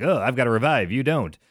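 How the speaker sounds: ordinary delivery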